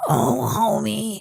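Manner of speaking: creaky, rough cartoon voice. Doing a requested impression for the other speakers: Marge Simpson impression. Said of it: "my Marge impression".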